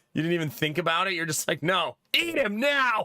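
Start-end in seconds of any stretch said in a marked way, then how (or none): 1.6-3.0 over-keen, eager, high-pitched, very slow delivery. Mimicking the same eager answer again: imitating Jonah's over-enthusiastic demand. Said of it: "Too much enthusiasm".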